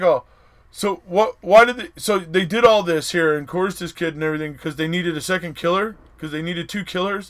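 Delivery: put-on halting old man voice. Retelling a judge's question in oral arguments, imitating a doddering old man. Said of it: "he sounds like this, like, doddering old man".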